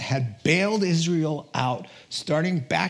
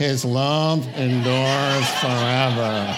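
put-on gloomy donkey voice, lower pitch; 3 semitones lower, 4 dB louder than usual. Showing the group how not to read the psalm line, bored Eeyore voice. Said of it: "Or like Eeyore".

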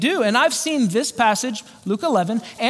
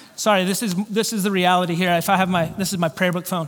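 ordinary delivery

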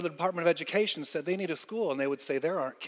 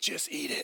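soft, hushed whisper under the breath; 3 dB quieter than usual. Retelling how a companion leaned over at a meal: imitating a whisper. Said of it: "he whispers to me".

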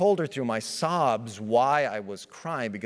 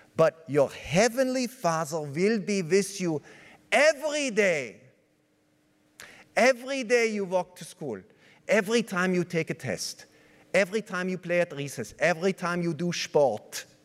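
put-on Swiss-accented English, evenly spoken; 4 semitones higher than usual. Quoting what a woman told young René, in her Swiss accent. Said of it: "in her Swiss accent".

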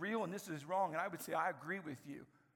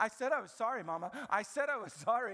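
put-on cross, angry three-year-old child voice; 4 semitones higher, 4 dB louder than usual. Retelling how a three-year-old repeated his apology to his mama, imitating a child saying it madly. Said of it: "he starts saying it in a mad way".

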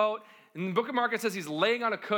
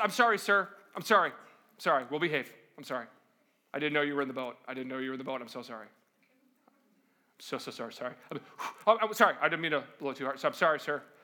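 low, deep, apologetic voice, repeated; 7 semitones lower than usual. Retelling Jesus rebuking the storm, voicing the sea: mock-apologetic sea voice. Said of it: "it's as if the sea says".

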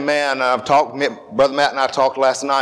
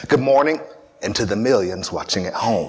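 evangelist revival preacher broadcast delivery; 4 semitones lower than usual. Greeting the congregation and the live-stream audience: Billy Graham voice. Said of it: "in my best Billy Graham voice".

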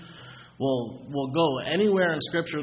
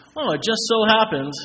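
thick, mocking sarcasm, raised and high; 7 semitones higher, 6 dB louder than usual. Pointing out a pattern across scripture lists: very sarcastic. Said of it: "I say that very sarcastically".

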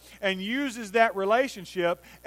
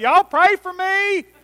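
very high, very loud, drawn-out holler; 10 semitones higher, 8 dB louder than usual. Retelling a nephew being carried out of a quiet church: imitating a holler. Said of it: "he hollers out".

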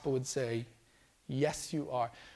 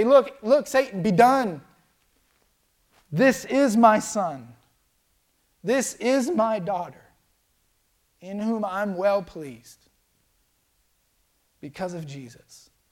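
raised, slow, commanding voice; 6 semitones higher, 9 dB louder than usual. Voicing God speaking to Satan, in a raised voice. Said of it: "He'll raise His voice and say".

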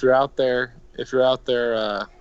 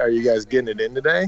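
usual speaking voice

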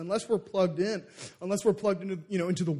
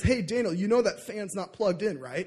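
plain

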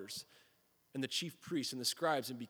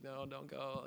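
put-on whiny, complaining, pleading tone; 6 dB quieter than usual. Retelling his wife begging him not to leave: imitating whining. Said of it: "whining about the cold".

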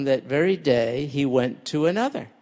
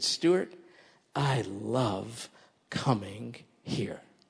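very soft, slow, close whisper, love drawn out; 4 semitones lower, 10 dB quieter than usual. Retelling what a young man said after church, imitating a whisper. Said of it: "he whispered in my dear, my ear. He said".

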